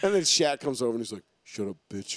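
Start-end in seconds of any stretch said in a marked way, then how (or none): 1.4-2.2 low, breathy whisper, quiet. Retelling what Shaq said when he came over: low Shaq voice. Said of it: "Shitting on people with his low voice, low-tone voice".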